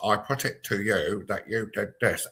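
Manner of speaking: stiff, rigid puppet voice. Imitating a prosecutor at a trial: Spitting Image John Major voice. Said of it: "spitting image character of John Major, very much like this".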